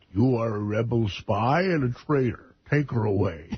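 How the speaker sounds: put-on masked villain voice. Playing along after being told of sounding like Darth Vader: Darth Vader voice. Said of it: "Sounds like Darth Vader".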